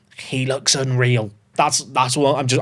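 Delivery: whispering. Speaker talking about a newly signed seventeen-year-old player, whispering. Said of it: "I don't know why I'm whispering it".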